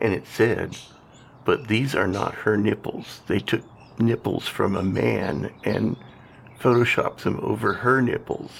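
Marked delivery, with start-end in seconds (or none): none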